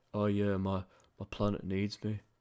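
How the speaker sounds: dead-level, flat, one-note monotone drone. Speaker mimics a character he says sounds very monotone, monotone imitation. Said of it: "He's so monotone".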